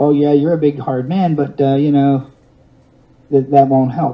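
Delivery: put-on smug, dismissive, patronizing, condescending voice. Recounting a voice he heard in the woods, mock-patronizing voice. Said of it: "The voice that I heard was patronizing".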